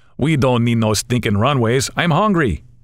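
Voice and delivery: put-on, phony Mexican accent. Narrator reading the pilot's answer to a worried passenger, phony Mexican accent. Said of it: "Dan announces with a phony Mexican accent".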